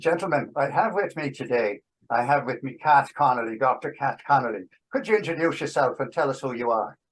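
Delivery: all-out Irish accent, host style. Podcast host introducing a guest, who asked for it, in a full irish accent. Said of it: "I want the full Irish accent for my introduction".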